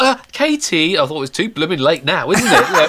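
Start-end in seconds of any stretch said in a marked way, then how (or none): 0.0-1.0 put-on small, tiny, very high little child voice. A father retells what his daughter said to him: imitating a child's little voice. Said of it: "this little voice".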